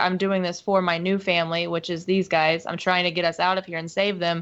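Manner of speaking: ordinary talk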